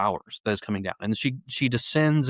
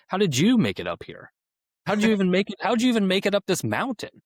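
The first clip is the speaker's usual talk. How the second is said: put-on sarcastic scolding voice, higher; 9 semitones higher than usual. Acting out Beatrice's lines to the pilgrim: sarcastic Beatrice voice. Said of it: "as she's being sarcastic to him".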